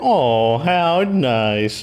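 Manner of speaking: patronizing, condescending motherly voice. Mocking a woman's voice the speaker hates, mocking condescending mom voice. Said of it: "she sounds so condescending. Like".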